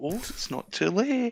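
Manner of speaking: tempting, high, slow devilish half-whisper. Pretending to tempt someone undecided: half-whispering like a little devil. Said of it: "whisper in their ear like a wee devil".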